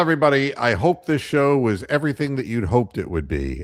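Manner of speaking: heavily sarcastic, swooping sing-song delivery. Wrapping up the show, speaking to everybody: sarcastic. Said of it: "I'm just being sarcastic".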